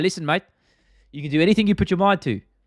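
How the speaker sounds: lifted, encouraging voice. Convincing a visually impaired man he can win archery gold: Alexander Volkanovski impression. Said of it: "Impression of Alexander Volkanovski".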